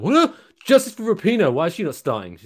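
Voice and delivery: high, loud shouting.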